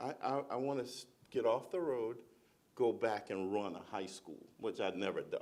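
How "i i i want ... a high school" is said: ordinary talk, nothing marked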